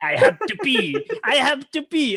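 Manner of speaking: put-on very high, drawn-out, slow, sing-song Filipino accent. Retelling a woman who kept saying she had to pee, imitating her filipino accent. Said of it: "Was was that her Filipino accent?".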